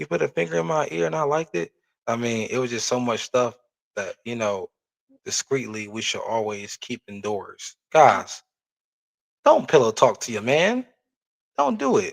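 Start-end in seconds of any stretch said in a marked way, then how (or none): 0.0-1.7 put-on angry arguing tone, higher pitch. Acting out an argument in a relationship: imitating an angry argument. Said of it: "spitting and angry".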